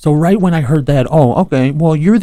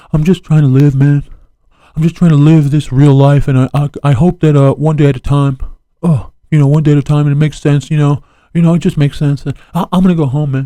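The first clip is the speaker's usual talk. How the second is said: play-acted mopey, small, sad little voice. Retelling how a man answered a paparazzo's question, imitating a little sad voice. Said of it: "he like does a like a little sad voice".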